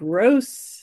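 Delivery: gross strongly stressed, hit hard. Speaker qualifies a previous remark, with key emphasis on the word gross. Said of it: "key emphasis on the word gross".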